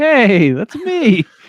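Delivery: shrill, very high, loud, belted character voice. Imagining an actor watching this at home: Steve Buscemi voice. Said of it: "In a Steve Buscemi voice".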